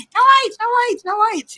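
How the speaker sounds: put-on very high, loud, shrill, insistent repeated yelling. Acting out shouting at a meeting about lighting: pretend shouting. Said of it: "I would just be that woman shouting".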